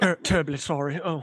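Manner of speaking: acted nervous stammering. Showing off the one impression he can do, nervous Hugh Grant impression. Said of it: "Hugh Grant, like, down to a T".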